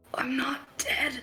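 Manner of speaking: harsh, hoarse, rasping whisper. Voicing a confused character clutching her head: harsh hoarse whisper. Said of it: "with a harsh, hoarse whisper, you hear her say".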